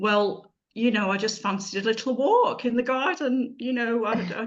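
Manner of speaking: put-on, cheeky, lippy voice dripping with sarcasm. Retelling a cheeky reply to mum about walking in the garden: retelling own sarcastic reply. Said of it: "me being really sarcastic and a bit lippy saying".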